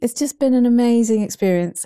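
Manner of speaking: near tears, moved, tearful, emotional voice. Podcast host thanking listeners at the end of a season, tearing up. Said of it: "I'm tearing up now".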